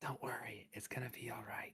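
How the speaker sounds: barely audible, soft, hushed whisper. Speaker retelling what they whispered to Radar, whispering. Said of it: "I'm just gonna whisper like".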